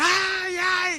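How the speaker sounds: shrill, high-pitched crying screams. Retelling a story of a wife being beaten: imitating a wife screaming. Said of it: "la esposa empezó a gritar".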